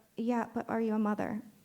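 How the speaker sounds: ordinary talk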